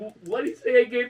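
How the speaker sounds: put-on scared voice. Retelling how a friend leaned over to ask: imitating a scared question. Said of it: "'Cause you're scared to ask him".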